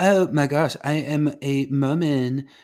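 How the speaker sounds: mocking put-on voice.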